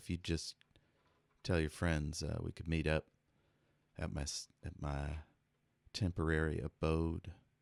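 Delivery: speaking in a whisper. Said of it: "I'll just whisper".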